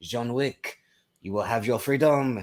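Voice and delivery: put-on French accent. Quoting a John Wick Chapter Four line, Bill Skarsgård French accent. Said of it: "amazing French accent".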